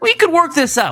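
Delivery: high pleading voice.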